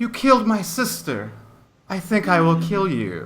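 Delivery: calm gurgling woman's voice. Storyteller voicing a creature that speaks to the listeners: serene gurgling female voice. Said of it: "serene female voice that gurgles".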